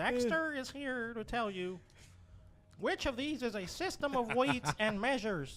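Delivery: high put-on character voice. Reading a quiz question to the other players in a Dexter voice. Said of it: "the fucking Dexter voice".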